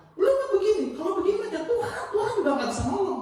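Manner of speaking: high, fast, angry scolding tone.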